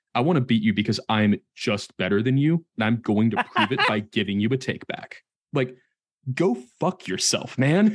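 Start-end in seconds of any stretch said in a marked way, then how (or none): 0.1-5.1 put-on condescending voice. Imitating how some players offer a takeback: imitating a condescending player. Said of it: "comes off as somewhat condescending".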